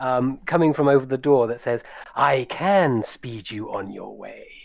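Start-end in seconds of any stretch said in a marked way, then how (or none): 2.1-4.5 sibilant, hissed dragon voice. A voice from over the door speaks to the party: hissing dragon voice. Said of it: "you hear a hissing voice".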